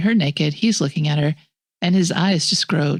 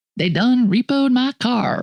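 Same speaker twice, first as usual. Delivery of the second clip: slow, drawling Cajun-style delivery; 6 semitones higher than usual. Imitating Clive talking about his car being repoed, Clive's Cajun-sounding accent. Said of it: "And that's what he sounds like".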